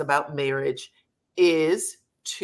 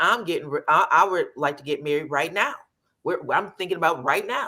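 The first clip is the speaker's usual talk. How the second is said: matter-of-fact, settled, certain tone. Retelling how Martell announced he wants to marry now: imitating Martell as if plans are set. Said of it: "He said it like".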